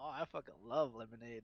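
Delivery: normal talking voice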